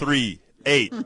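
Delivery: saying it slowly and deliberately. Repeating a phone number after being told it was said too fast, slow deliberate pace. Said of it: "let me say it slower".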